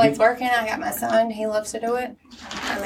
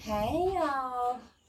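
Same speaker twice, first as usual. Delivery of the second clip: fake seductive voice, higher and quieter; 4 semitones higher, 8 dB quieter than usual. Greeting the listeners when asked to say hey: put-on sultry voice. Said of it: "that's not a bad voice".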